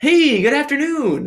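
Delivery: bright, chipper, very high-pitched cheer. Retelling how a police officer greeted him: imitating a chipper greeting.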